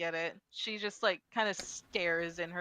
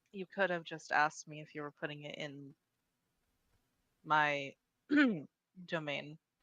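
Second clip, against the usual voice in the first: choking coughs breaking into the words; 3 semitones lower than usual. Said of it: "coughs a bit as if she's, like, choking on something".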